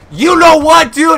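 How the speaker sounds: high, loud, raging angry yell.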